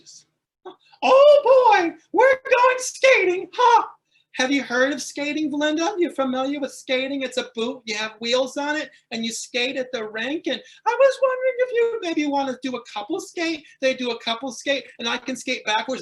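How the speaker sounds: small, wimpy, sing-song voice. Speaker asks Belinda about skating, in a wimpy Mickey Mouse voice. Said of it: "My little wimpy Mickey Mouse voice".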